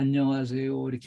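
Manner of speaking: limp, lifeless voice. Imitating a man's greeting that customers ignore, imitating a listless greeting. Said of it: "맥이 없이 그냥, 안녕하세요. 이렇게 하니까".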